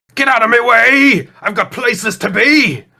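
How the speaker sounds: very high, shrill, piercing creature voice yell. Narrating a scene, the speaker voices a redcap in a shrill yelling redcap voice. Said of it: "you hear the shrill voice of a redcap yelling".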